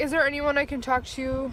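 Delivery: ordinary talk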